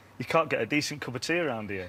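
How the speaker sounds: ordinary talk, nothing marked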